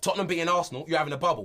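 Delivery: a bit of a Cockney accent. Showing the other speaker how to say a phrase, in a cockney accent. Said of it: "say it in a bit of a Cockney accent".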